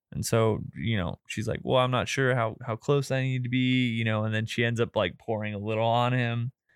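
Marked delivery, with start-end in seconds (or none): 1.6-3.8 put-on nervous woman's voice. Retelling a woman's hesitant question about pouring: imitating a nervous woman. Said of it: "she's just really nervous".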